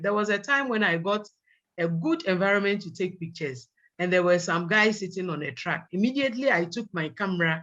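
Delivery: ordinary talk, nothing marked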